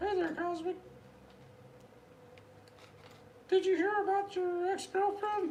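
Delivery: high-pitched squeaky voice. Speaking to Cosmic on a live stream, Mickey Mouse voice. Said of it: "Sounds like Mickey Mouse".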